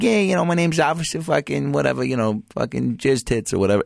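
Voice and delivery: put-on Chicago accent. Retelling how he played a cop character for people, doing a chicago accent. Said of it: "I would do this like Chicago accent like this".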